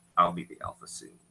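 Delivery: low muttered aside, under the breath, kept quiet. Speaking in character about the alpha so he cannot hear: muttered under the breath. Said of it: "under my breath, not so that he can hear".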